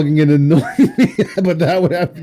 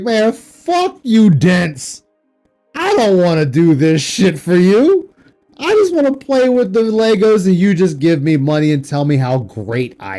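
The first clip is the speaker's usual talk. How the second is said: lively, sing-song, swooping, animated rant. Mocking imitation of Phil complaining about making content: imitating Phil. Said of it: "He is just like".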